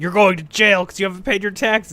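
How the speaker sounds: shouting. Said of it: "yelling at you".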